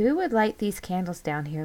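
ordinary delivery

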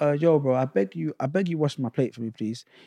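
soft, peaceful pleading voice. Speaker retells asking someone at the sink to wash their plate, imitating a gentle plea. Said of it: "It was really nice and peaceful and gentle".

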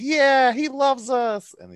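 very high, slow, loud mock devotion.

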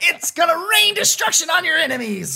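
high-pitched robotic announcer voice. Describing a character, speaker quotes him in a robotic, high-pitched Zircon Jr. voice. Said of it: "this like very robotic, high-pitched voice".

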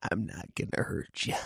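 hushed, breathy whisper. Retrying the line in a Jack Nicholson voice: Jack Nicholson impression. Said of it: "Is that George Bush?".

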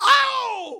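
very high, slow, loud wailing shout.

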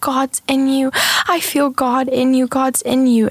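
put-on high, tearful, sobbing voice of a weeping child. Retelling what a weeping five-year-old girl said while hugging, imitating a crying child. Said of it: "she's just crying and crying".

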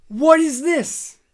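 put-on heavy Yiddish-sounding accent.

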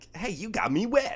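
shrill, very high, very loud, playful happy yell. Telling how you yelled at a little girl, retelling a happy playful yell. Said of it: "yelled in a happy tone like".

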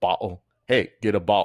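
very loud, weird put-on Cockney accent. Imagining how an England-born man talked, in a weird Cockney accent. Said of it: "that weird Cockney accent".

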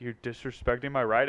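imitated scary, menacing, threatening tone. Retelling a stranger's quiet warning about a car: imitating a scary menacing line. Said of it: "anyone that says it like that, you know that that's scary".

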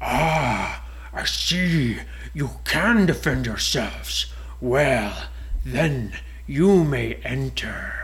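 slow dragon voice with long drawn "ah". Telling a story aloud, the narrator voices the big dragon speaking to the travellers. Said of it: ""Yes, I am a door. I'm not a real dragon, but I have been enchanted with magic so that I can move and I can talk to people who want to enter / And the castle was shaped kind of like a dragon's head. T".

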